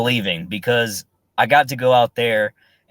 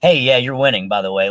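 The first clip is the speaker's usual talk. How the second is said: very nonchalant, casual offhand delivery. Retelling what Anthony said in passing: imitating Anthony, very nonchalant. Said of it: "Like, very nonchalant".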